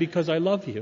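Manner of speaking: ordinary talk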